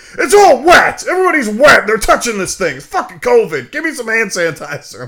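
enraged, very high-pitched, very loud, shrill screaming. Retelling a friend's complaint inside a haunted house: imitating someone screaming angrily.

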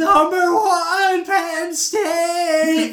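very high, very slow, drawn-out yell. Retelling someone shouting at a Penn State player to get his attention: retelling a yell. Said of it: "he just yelled".

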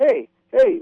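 high calling-out voice on "hey".

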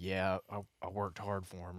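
soft, low, muttered under the breath.

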